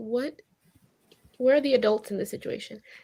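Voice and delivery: ordinary talk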